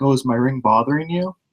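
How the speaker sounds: polite, courteous, considerate tone. Retelling what the dentist asked about her ring: imitating a polite dentist. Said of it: "She's very polite about it".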